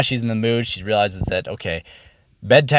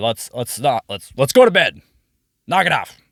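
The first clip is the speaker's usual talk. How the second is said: mock stern, firm fatherly voice. A father retelling how he told her to go to bed, thunderous dad voice. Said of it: "I used my thunderous dad voice".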